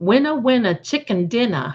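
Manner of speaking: New England Boston accent with dropped r's. Congratulating their auntie on her win, in a Boston accent. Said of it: "in that Boston accent".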